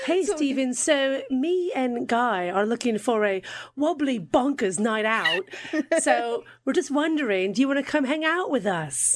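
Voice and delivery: put-on English-American Mid-Atlantic accent. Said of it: "that Mid-Atlantic accent".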